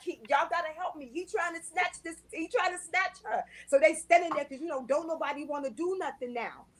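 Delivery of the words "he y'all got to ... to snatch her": put-on, high, mild half-hollered call. Retelling asking workers for help with a stranger's child: retelling own hollering. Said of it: "I'm hollering, I'm hollering with them".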